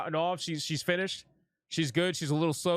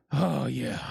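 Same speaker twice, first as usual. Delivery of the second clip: mock heavy breathing, lower pitch; 4 semitones lower than usual. Retelling how a character reacts in a clip: imitating deep breathing. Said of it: "She's breathing in deep".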